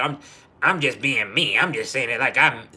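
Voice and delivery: mocking, put-on disrespectful tone. Imitating blunt people who call their rudeness honesty: imitating disrespectful talk. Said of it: "y'all just be like".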